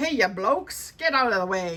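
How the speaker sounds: put-on old-time English policeman voice and accent. Showing off a policeman's whistle, trying a better put-on English accent. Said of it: "I gotta do a better English accent".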